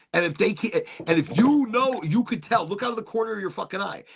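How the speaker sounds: normal talking voice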